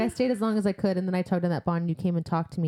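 usual speaking voice

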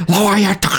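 high mock scolding character voice.

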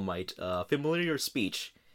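normal talking voice

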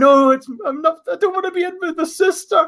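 shrieking, very high-pitched screaming protest. Retelling a game story where the wife screams from the grave: imitating someone screaming. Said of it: "she's screaming".

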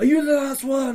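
very high, loud shouted yell. Recounting an imagined scene, the speaker retells yelling at the skirmish captain: retelling a yell. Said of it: "I'm like yelling at them".

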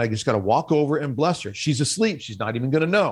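ordinary delivery

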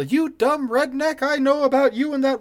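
mock, shrill, very high, full-on yelling. Acting out an imagined scene where Peggy yells at Dale: Peggy Hill yelling. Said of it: "Peggy comes out and starts yelling at Dale".

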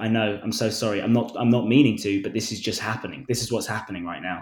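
plain

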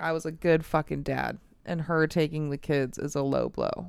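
ordinary delivery

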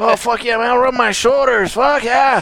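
put-on stoner voice. Voicing the dog wanting his shoulders rubbed: Cheech voice. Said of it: "Cheech, man".

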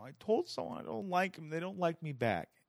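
put-on high, tearful speech through sobbing. Retelling telling mom about a rejection: imitating crying speech. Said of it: "I'm just crying in my room".

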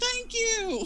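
mock shrill yell, very high-pitched. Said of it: "and I'm yelling".

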